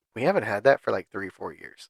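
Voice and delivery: snooty, dismissive, condescending tone. Retelling what the store staff said about an old purse: imitating a why-don't-you-know-this tone. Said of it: ""Why don't you know this?" kind of tone".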